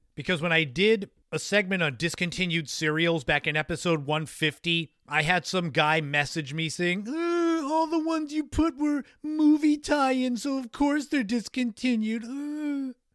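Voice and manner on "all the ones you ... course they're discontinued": very high, sneering, mocking critic voice. Retelling a message from a guy about discontinued cereals: mocking imitation of a commenter. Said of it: "That's my imitation of that idiot".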